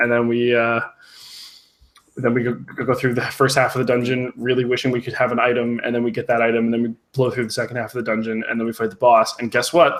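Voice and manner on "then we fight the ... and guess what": ordinary talk, nothing marked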